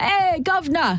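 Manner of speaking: English accent, cockney or posh. You're explaining regional speech and you do a short, stereotyped British voice on cue, just enough to let the listener hear the higher pitch. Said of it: "surfer dudes".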